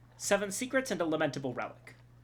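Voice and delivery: ordinary delivery, nothing marked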